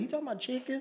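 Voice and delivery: high, soft, confused, puzzled tone.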